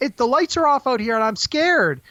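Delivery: put-on very high, childlike little girl voice. Retelling a movie scene, the girl speaks to the man behind the door: little girl's voice. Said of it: "it's the little girl's voice".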